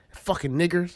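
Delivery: normal talking voice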